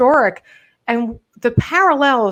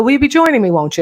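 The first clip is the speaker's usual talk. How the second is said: Irish lilt with rising intonation; 5 dB louder than usual. Speaker whose mother is from Ireland demonstrates Irish intonation. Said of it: "pick up the intonation of the Irish".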